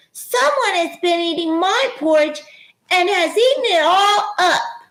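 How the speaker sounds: tiny, very high little voice. Reading the three bears story aloud, the narrator voices Baby Bear's wee little voice. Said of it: "said in his wee little voice".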